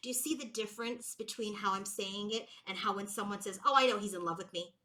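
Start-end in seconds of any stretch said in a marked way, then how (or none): 3.6-4.7 smug, arrogant, self-satisfied, know-it-all delivery. Contrasting how someone else says it, with an arrogant manner. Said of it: "There's this there is this energy of arrogance in that manner".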